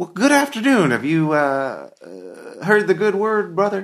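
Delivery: very high, gentle, swooping sing-song voice. Voicing the old preacher as he greets a visitor: Desmond Michaud, gentle voice. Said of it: "speaks with a very gentle voice".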